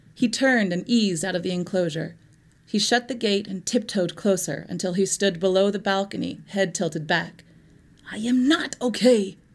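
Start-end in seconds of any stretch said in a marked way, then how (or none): 8.1-9.3 whispering, higher and slower. A man below the balcony answers a question, whispering. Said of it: "he whispered".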